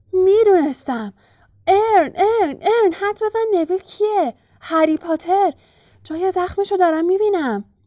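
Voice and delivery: joyful shouting. A man calls out to his companion, shouting happily. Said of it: "با خوشحالی فریاد زد".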